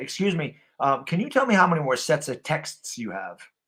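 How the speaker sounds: very calm, courteous, polite tone. At the gym, retelling asking someone on the leg press, speaking very calmly. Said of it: "I just say very calmly".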